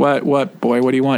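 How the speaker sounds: ordinary delivery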